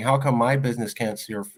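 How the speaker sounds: put-on crying, tearful voice. Recounting a shop owner's complaint about caterers across the street, imitating someone crying. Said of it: "she's crying".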